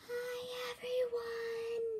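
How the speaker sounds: barely audible, very soft and high voice. Repeating the greeting after being asked: too quiet to hear. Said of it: "I still couldn't hear you".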